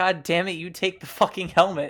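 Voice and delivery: shouting. Insisting the other take the helmet after refusals back and forth: yelling. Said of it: "sorry I yelled".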